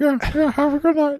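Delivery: very high, pitched way up cartoon puppet voice. Retelling what a cop at the drive-thru said, imitating a Muppet voice. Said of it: "one more cop who had a Muppet voice".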